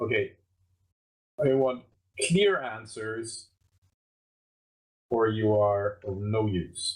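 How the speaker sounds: threatening, menacing voice. Holding a sword to a thug's throat, demanding answers: threatening. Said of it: "put it across his throat, and say".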